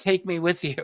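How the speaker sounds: acted excited little scream. Retelling a UFO sighting where a man screams at the craft: imitating someone screaming. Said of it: "he's screaming at the triangular craft".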